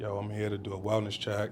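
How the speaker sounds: plain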